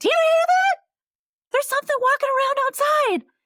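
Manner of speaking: shrill, high, loud, far-carrying yell. Retelling a friend calling from the other room at night: imitating someone yelling. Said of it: "my other friend kinda yells from the other room".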